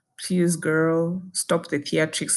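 normal talking voice

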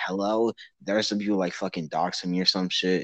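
ordinary delivery

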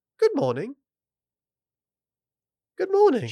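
put-on very high, lilting, sing-song English accent. Retelling what a kind guy said the next morning, in his English accent. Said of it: "with his English accent".

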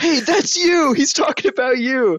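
yelling, pitched very high. Retelling how a man stands up mid-audience and turns around, imitating someone yelling. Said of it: "starts yelling".

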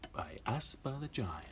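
soft, high ad announcer voice. Signing off until the next episode, the speaker uses an advertising voice. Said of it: "It's my advertising voice".

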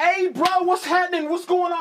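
put-on very high, loud, strong New York accent. Retelling a guy behind a shop counter in Iraq greeting him, New York accent. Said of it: "talking like he's straight from New York".

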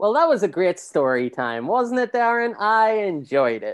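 sarcastic, ironic, high and swooping, plainly insincere. Praising a story time that was pre-recorded earlier: sarcastic tone. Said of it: "sounding sarcastic when I talk".

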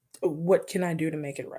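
ordinary delivery

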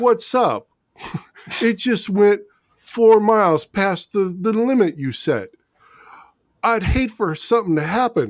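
tough-guy mobster voice. Acting out a car tracker calling the owner, in a Sopranos mobster voice. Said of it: "You sounded like somebody off The Sopranos".

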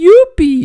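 very high, shrill, very loud outcry. After his magic trick seems to work, a magician is exclaiming. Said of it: "exclamou Monty".

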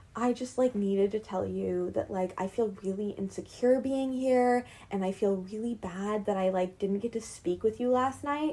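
mock soft-spoken voice. Retelling what a man told a woman outside, imitating a really soft voice. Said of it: "he starts in, like, a really soft voice".

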